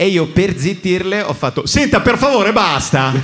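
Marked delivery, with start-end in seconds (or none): 1.6-3.1 over-the-top, bad, shrill, exaggerated Milanese accent. Retelling how they hushed the loud people nearby, using an exaggerated worst-milanese accent. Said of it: "Proprio imitando il peggiore dei milanesi".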